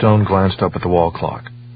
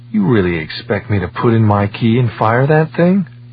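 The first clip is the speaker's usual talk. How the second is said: plain reading voice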